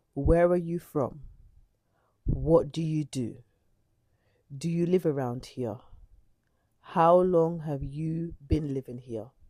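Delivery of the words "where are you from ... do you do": ordinary delivery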